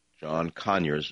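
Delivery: first syllable of Conyers emphasized. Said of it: "emphasis on the first syllable".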